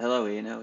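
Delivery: glum, serious tone. Opening the podcast episode, greeting his co-host, a somber greeting. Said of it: "Why have you started in such a somber way?".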